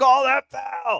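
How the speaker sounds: shrill, raspy, ragged, very high-pitched scream. Recalling the crowd at a game yelling at the referees, retelling a crowd's scream. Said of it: "everybody's just screaming like".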